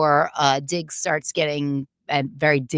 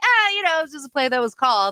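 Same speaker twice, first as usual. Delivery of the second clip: very high-pitched, light, shrugging, laughing-it-off tone; 10 semitones higher than usual. Retelling how Pop Douglas laughed off a failed fourth-down play: imitating Pop Douglas laughing it off. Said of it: "who kinda laughed it off".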